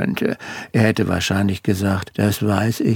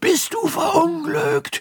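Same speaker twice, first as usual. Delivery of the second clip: very loud, high-pitched call at full voice. She answers the narrator's phone call, calling out very loudly. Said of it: "rief sie so laut".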